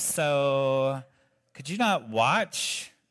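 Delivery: put-on valley girl voice, long drawn-out so. Reading a line spoken to Peter, in a valley girl voice. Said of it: "like a valley girl kind of thing".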